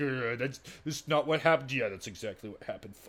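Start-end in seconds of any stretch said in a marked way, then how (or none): 0.0-1.7 muttered, grumbling, under the breath. Retelling how a woman reacted in a conversation, imitating someone grumbling. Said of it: "She just kind of like grumbles like".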